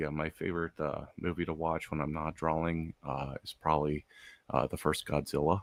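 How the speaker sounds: soft, hesitant, halting, low-key mumble. Describing how many artists talk when they do talk: imitating quiet artist talk. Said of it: "they talk like this".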